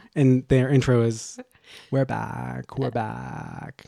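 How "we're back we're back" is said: mock creaky, fried voice. Describing a podcast's intro to the other speaker, Red Scare vocal fry impression.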